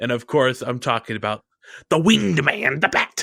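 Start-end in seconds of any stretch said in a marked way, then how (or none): 1.9-3.2 theatrical, grand supervillain-style announcer delivery. Naming Batman while comparing superheroes: villain voice like the Riddler. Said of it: "you sound like a villain right there".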